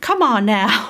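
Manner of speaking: put-on, laid-on Southern drawl. Showing how they kept talking after watching a show: Southern accent. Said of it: "talking in, like, that Southern accent".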